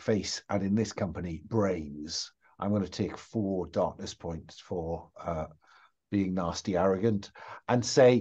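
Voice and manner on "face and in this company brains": low, soft muttered aside under the breath. Voicing a character who is sick of this, said under his breath. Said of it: "under his breath says".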